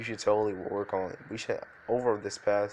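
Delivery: ordinary delivery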